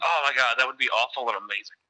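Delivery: ordinary talk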